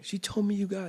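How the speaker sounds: very high, sniffly, tearful crying voice. Retelling a prison visit where the daughter answers: imitating sniffling speech.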